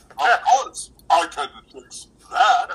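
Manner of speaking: booming, very loud radio announcer voice. Recalling one guy who delivered every line this way, radio announcer voice. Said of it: "he sounded like a radio announcer".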